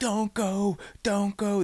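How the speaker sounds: mock very high, stretched-out, drawn-out scream. Retelling a movie scene where a father screams to his daughter: imitating someone screaming. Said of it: "he's screaming at his daughter".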